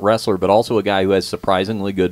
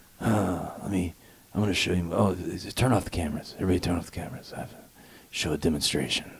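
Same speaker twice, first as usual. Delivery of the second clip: quieter put-on creepy whisper voice; 2 semitones lower, 10 dB quieter than usual. Imitating Steven Seagal asking everyone to turn off the cameras: Steven Seagal creepy whisper. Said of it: "the creepy whisper voice".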